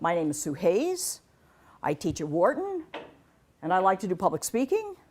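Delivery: uptalk rising at end of Hayes, Wharton. Illustrating the uptalk habit in a self-introduction, with uptalk rising like a question. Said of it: "Uptalk is where at every comma in a sentence you go up".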